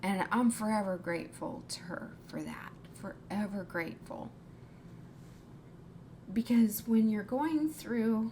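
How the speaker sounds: getting choked up, voice choking. Sharing a personal story of gratitude, getting choked up. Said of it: "I'm so sorry for getting choked up about it".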